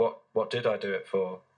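put-on very soft, soft-spoken voice. Retelling a therapist's reply after being choked: imitating a very soft voice. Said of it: "It's a very soft voice".

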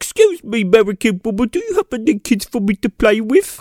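worst fake British accent, bad imitation. Speaker imitating a dubbed royal kid asking an american woman, worst fake british accent. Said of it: "the worst British accents I've ever heard".

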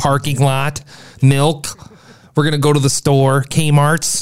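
Midwestern American accent. Saying words to show where one is from: Midwestern accent. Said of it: "Can you judge that I'm from the Midwest".

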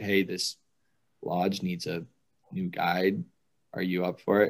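usual speaking voice

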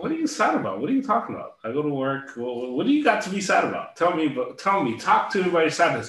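high, swooping, heavy mocking sarcasm laid on thick. Retelling how a mom would respond to sadness: imitating a sarcastic parent. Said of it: "in a very sarcastic way".

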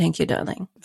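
breathy, whispered near-whisper of a famous actress. Echoing an actress's words from the other speaker's story: imitating Kathleen Turner's voice. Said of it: "Very Kathleen".

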